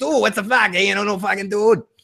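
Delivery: put-on thick Boston accent. Imitating how a friend talks when his boston comes out, thick boston accent. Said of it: "He's so fucking Boston accent".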